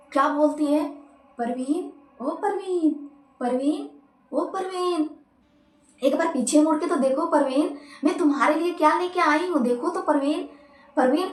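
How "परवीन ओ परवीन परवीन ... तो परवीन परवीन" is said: honeyed, loving, sweet, coaxing witch voice. Speaker retells a witch calling out to someone: imitating witch's loving voice. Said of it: "जो चुड़ैल थी ना वो इतनी प्यार से बोलती है ना".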